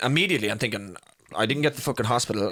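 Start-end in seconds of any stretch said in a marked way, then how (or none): none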